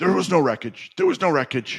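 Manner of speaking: pissed-off, heated, very high, swooping voice. Retelling his reply to a pointed question: imitating an angry reply. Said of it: "And he got pissed".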